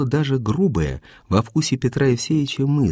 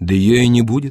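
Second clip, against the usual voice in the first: dry, dryly spoken; 3 semitones lower, 5 dB louder than usual. Narrator reads Strukov answering Natasha on a steamer; said dryly. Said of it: "сухо сказал Струков".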